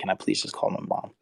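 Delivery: play-acted breathy whisper through tears. Retelling begging after getting signed: retelling a tearful plea. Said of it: "I broke down in tears and I begged him".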